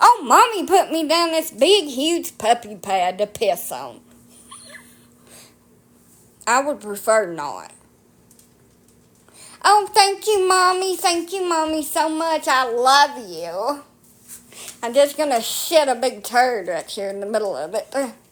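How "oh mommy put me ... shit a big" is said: put-on swooping, drawn-out pet dog voice. Speaker imagining what the dogs will think of a rug over plywood, voicing the dogs' thoughts. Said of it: "Guess what they're going to think?".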